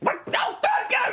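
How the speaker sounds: very high, panicked creature cry. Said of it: "Delamay goes like".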